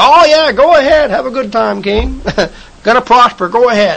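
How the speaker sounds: play-acted, joking, mocking sarcasm. Retelling a prophet's words to the king: acting out sarcastic mockery. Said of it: "He's being sarcastic".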